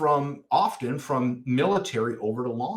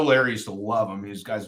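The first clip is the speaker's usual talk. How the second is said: usual speaking voice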